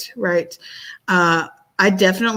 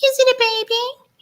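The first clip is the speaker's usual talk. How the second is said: very high, drawn-out, little cuddly bird voice. Describing how the pet bird talks when it wants to cuddle, imitating its cuddle voice. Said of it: "change his little tone of voice when he wants to cuddle".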